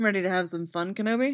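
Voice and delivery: said teasingly. He asks Kenobi before they head to the festival: teasing. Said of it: "He asks teasingly".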